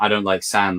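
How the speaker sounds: plain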